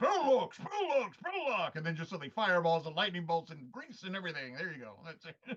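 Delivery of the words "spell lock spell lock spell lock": grand, big booming voice, very high. Explaining a game combo, the player calls out the spell in a big voice. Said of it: "big voices".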